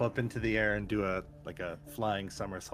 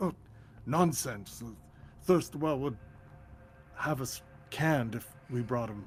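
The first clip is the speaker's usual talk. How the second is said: put-on older man's voice, higher pitched; 4 semitones higher than usual. Voicing a man who argues with a servant about coffee: older man's voice. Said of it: "you hear an old, an older man's voice".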